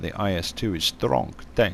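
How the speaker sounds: appalling fake Russian accent. Presenting a tank in a video, in an appalling russian accent. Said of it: "my appalling Russian accent".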